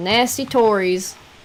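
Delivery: loud rural American country accent. Asked to try a British accent, speaker does it the country way: country-way accent. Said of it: "I'm doing it the country way".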